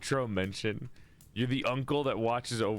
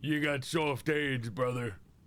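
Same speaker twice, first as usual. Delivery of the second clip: restrained New York goon accent, tough-guy voice. Speaker tries the goon voice without yelling: goon voice without yelling. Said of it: "Trying to do the goon voice without yelling".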